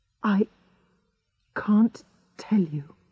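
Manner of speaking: whispering. Narrator reads Nurse Harrison answering the narrator's question: whispered. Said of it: "she whispered".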